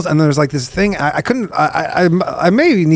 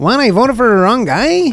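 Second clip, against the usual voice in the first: fake, mock Spanish-speaker accent; 6 semitones higher than usual.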